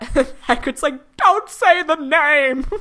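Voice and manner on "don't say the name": put-on sobbing, much higher and louder. Recapping a Harry Potter scene to a listener, imitating Hagrid sobbing. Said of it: "As he's sobbing".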